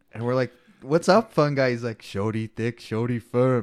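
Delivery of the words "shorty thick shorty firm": put-on deep, low-register voice with Nigerian accent. Retelling what a friend says at the bar: Fun Guy's deep Nigerian voice. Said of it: "in his deep Nigerian voice".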